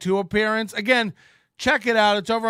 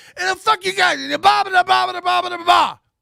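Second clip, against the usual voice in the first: shrill, whiny tough-guy voice, very high, ranting; 10 semitones higher, 4 dB louder than usual. Mocking someone's fake tough talk: Corey's high-pitched whiny tough-guy voice. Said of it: "high-pitched, like, whiny voice when he tries to act tough".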